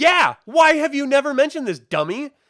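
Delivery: very high, loud, shrill, frustrated screaming. Recounting watching a show, the speaker yells back at a character: retelling screaming at the tv. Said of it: "I'm screaming at the T V".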